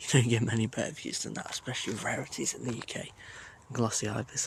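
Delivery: very quiet, hushed, kept-down murmur. Watching a close pair of glossy ibis, hushed and keeping voice down. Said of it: "I'm trying to keep my voice down".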